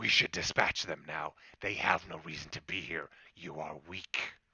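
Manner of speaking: growling, growled delivery. The wolf Flame speaks to Bolt; Flame, growling. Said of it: "and that's the red flaming wolf and [name], / And literally the eyes just immediately start glowing red, and you see this just almost, you feel the heat that feels like [name] and fire just emanating".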